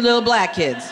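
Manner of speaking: ordinary talk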